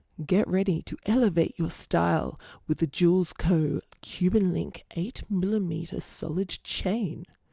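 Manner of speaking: sultry, sexy put-on Australian accent, ad-read announcer style. Reading a chain's product description aloud to viewers, in a sexy australian voice. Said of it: "I'll get my sexy Australian voice on".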